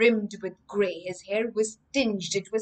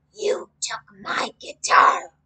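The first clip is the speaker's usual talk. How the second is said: harsh, raised, breathy hoarse rasping voice; 5 dB louder than usual. Reading a story aloud, a man playing guitar speaks, hoarse voice. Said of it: "he said in a hoarse voice".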